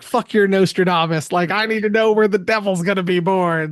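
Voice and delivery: imitated scream. Retelling a movie scene where a character disrupts a lecture: imitating screaming.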